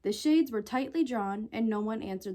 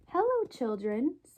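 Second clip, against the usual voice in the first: sweetly spoken, sweet voice; 4 semitones higher than usual. Someone arriving in the hall greets the waiting children, sweet voice. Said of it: "someone said in a sweet voice".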